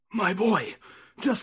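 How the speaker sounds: fearful, wary, anxious tone. Reading a tale, a priest pulls a young man aside, hushed and fearful. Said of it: "in a hushed and fearful tone".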